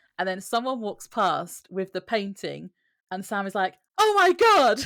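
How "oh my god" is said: piercing, shrill, really loud outcry. Recapping a scene where a man sees a painting carried past, imitating a really loud exclamation. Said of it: "So really loud".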